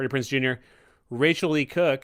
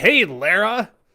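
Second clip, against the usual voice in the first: put-on loud, high-pitched Iowa American accent; 7 semitones higher, 5 dB louder than usual. Imitating a supporting role's line from a film: Daniel Craig's Iowa American accent. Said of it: "an Iowa American accent".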